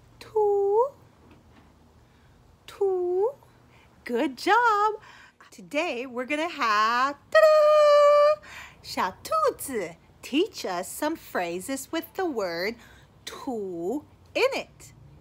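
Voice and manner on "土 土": fairy-tale storybook princess voice. Leading a kids' Chinese lesson, repeating the word in a princess voice. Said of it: "let's say it with the princess voice".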